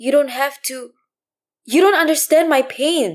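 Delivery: sharp words, high voice cracking and breaking. Reading a story aloud, a lonely woman answering: sharp, voice breaking. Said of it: "she said sharp. Her voice broke".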